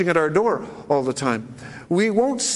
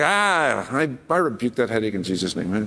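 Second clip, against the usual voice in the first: play-acted flippant, offhand, careless tone, no earnestness; 9 semitones lower than usual. Retelling a joking prayer said over the phone: retelling a flippant remark. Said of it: "I said it with flippancy, like".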